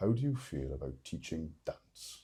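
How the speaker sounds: strong, broad Welsh accent, badly done. Retelling a job interview, quoting the interviewer's question, strong welsh accent. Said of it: "I don't do a, a strong Welsh accent very well".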